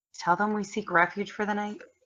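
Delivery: hushed, quiet half-whisper. A player's character leans toward a companion and speaks, in a half-whisper. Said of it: "lean forward and whisper kind of to Steamer".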